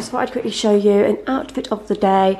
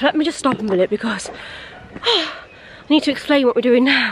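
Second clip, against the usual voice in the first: breathless, winded, halting, broken-up phrases; 4 semitones higher than usual. Stopping while climbing up to explain what they are doing, out of breath. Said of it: "I'm literally out of breath".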